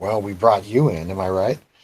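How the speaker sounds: teasing, joking, mocking voice. Speaker retells what a character jokingly said, in a mocking voice. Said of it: "talks in a mocking voice".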